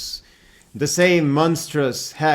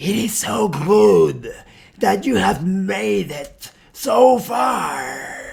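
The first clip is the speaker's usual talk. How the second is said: high, rough, gurgling creature voice, stretched far; 5 semitones higher than usual. Voicing the creature Aliona as it speaks to the group, in a gurgling voice. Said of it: "speaks in a gurgling voice".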